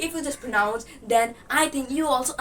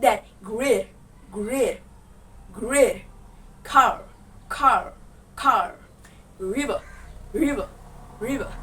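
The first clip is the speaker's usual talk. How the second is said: American pronunciation of great, car and river. Pronunciation lesson demonstrating words for learners in an american accent. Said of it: "And now just pronounce it in American accent".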